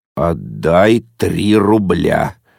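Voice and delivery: low, menacing, threatening, ominous voice. A father speaks to Yezhevikin, who came on duty: quiet and menacing. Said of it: "тихо и угрожающе сказал папа".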